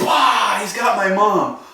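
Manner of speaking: acted, sudden, blurted-out high drawn-out scream. Retelling how a scared girl screamed out from the bushes: imitating a girl screaming. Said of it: "Screams out at the top of her lungs".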